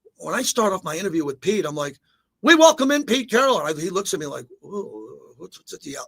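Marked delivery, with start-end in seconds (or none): 2.4-3.6 loud, high radio announcer yell. Showing how a radio interview with pete carroll starts, yelling radio intro. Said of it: "what's going on with the yelling?".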